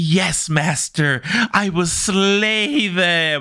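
very slow, sultry, seductive drawl. Retelling a story to friends, imitating a character answering her master in a sultry voice. Imitating a sultry voice. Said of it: "he's shouting like".

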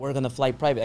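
ordinary talk

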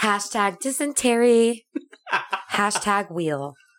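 put-on California-style voice. Riffing on an Instagram influencer's hashtags: put-on California voice. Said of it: "I gotta get out of the Cali voice".

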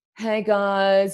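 mellow, easygoing, laid-back hippie voice. Retelling what Michelle said to everyone on Facebook: Michelle impression, hippie voice. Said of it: "in a hippie voice".

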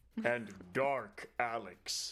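booming game announcer voice. Introducing a co-host by name: Smash Bros announcer voice. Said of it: "[name] does the Smash Bros announce voice".

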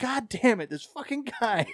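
mock screaming. Retelling yelling at the tv as a player went down: retelling own screaming. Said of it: "I was screaming at that".

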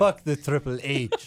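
clumsy, bad put-on Mexican accent. Retelling a wrestling event, the speaker repeats someone's line in a bad Mexican accent. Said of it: "How is that a Mexican accent?".

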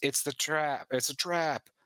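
high, frantic, panicky, alarmed yelp. Narrating a scene, you rip the duct tape off his face and he screams. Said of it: "He screams".

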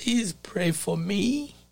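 mock voice cracking. A preacher retells a man asking him for prayer; retelling a cracking voice. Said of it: "with a cracking voice".

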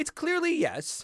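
high, slow, drawn-out, mock-certain insistence.

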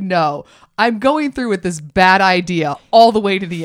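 normal talking voice

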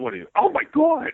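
weird, very high-pitched voice. Retelling a video clip, imitating Mike's weird voice. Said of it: "in a weird voice that I've never heard of".

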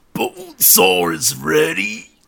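macho, swooping, rough wrestling-promo bravado voice. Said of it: "That's really good, mate".

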